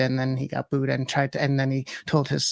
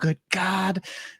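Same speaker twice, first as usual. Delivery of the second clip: mock distressed outcry, higher pitched; 5 semitones higher than usual. Retelling how upset people reacted online: imitating upset people crying out. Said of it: "people started crying".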